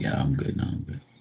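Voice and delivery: hushed, breathy whisper. Telling callers about a dramatic dog, voicing Diamond the dog. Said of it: "She's just like".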